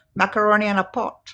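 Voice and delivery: put-on Indian accent. A parent quoting the child's answer about dinner, imitating Denver's Indian accent. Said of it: "And in an Indian accent".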